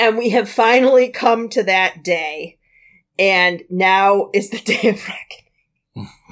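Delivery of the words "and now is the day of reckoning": talking through laughter, louder. Announcing the podcast's long-awaited movie pick: laughing while talking. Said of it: "I can't say it without laughing".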